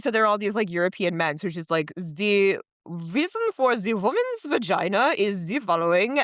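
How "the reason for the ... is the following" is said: put-on slow, deliberate Austrian German accent. Describing how she voices historical European men: Sigmund Freud accent impression. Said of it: "do an Austrian German accent kinda thing".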